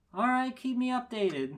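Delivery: high-pitched, loud, read-aloud delivery.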